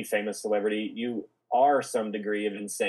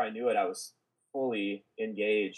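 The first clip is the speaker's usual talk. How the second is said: normal talking voice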